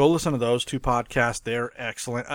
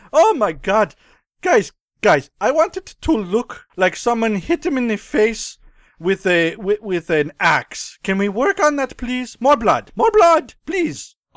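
fake German accent, much higher, louder; 10 semitones higher, 6 dB louder than usual. Speaker imagines the director giving notes on gory movies, in a high-pitched German accent. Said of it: "Like a high-pitched German guy".

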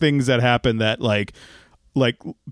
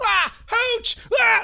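put-on comedic yell, higher pitch. Describing a movie's classic comedy moments, imitating Tom Hanks yelling. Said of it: "doing the, like, Woody yell".

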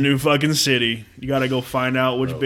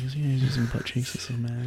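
put-on whisper, quieter; 7 dB quieter than usual. Imitating a friend who slipped in a quiet joke: imitating someone whispering.

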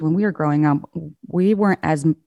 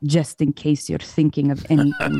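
put-on heavy, strong, laid-on European accent. Quoting his dad, home from work, explaining why he smacked them; strong european accent. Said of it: "in his strong European accent".

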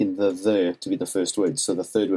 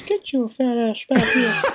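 put-on shrill, very high, slow old-lady grandma voice. Speaker retells a voice from the back as the group leaves; imitating grandma's voice. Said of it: "Grandma's voice in the back just goes".

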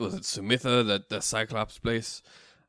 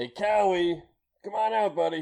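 high, raised shout calling out; 8 semitones higher than usual. Player's character calling a friend out at a grove, shouting. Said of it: "Devoth will just start shouting like".

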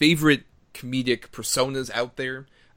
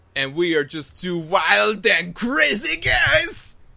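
very slow, drawn-out, sing-song, swooping high pitch; 8 semitones higher, 4 dB louder than usual. Opening a podcast episode with a catchphrase: Steve Martin impression. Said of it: "that wonderful impression I just did".

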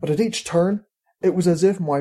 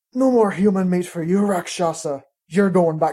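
hissing through the teeth. Facing a rakshasa, a man speaks, hissed between teeth. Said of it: "hissed between his teeth".

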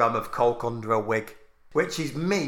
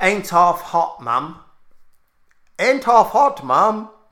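loud put-on fake accent, sliding into RP; 7 semitones higher, 6 dB louder than usual. Joking with another speaker, repeating a phrase: put-on accent drifting to RP. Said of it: "What accent was that I just did?".

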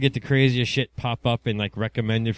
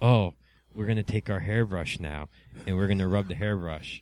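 mock soft ASMR whisper, lower and quieter; 3 semitones lower, 5 dB quieter than usual. Imitating ASMR video makers rubbing a hairbrush: imitating a soft, quiet ASMR voice. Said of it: "everything's all real soft and quiet".

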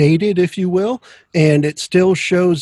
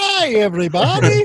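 pitched up and cartoonish voice; 6 semitones higher than usual. Imitating Doctor Nick's greeting after picturing him: Doctor Nick impression. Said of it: "Doctor Nick from The Simpsons".

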